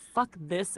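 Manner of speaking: ordinary talk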